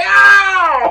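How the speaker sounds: very loud, high, long bellowed shout. Retelling how someone yelled while tackling: imitating someone yelling. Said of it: "he's yelling the whole time".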